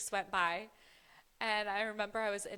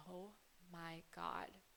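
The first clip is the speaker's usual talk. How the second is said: acted shaky, shocked voice, quieter; 3 semitones lower, 15 dB quieter than usual. Retelling seeing a pregnancy test result: imitating own shaken panic.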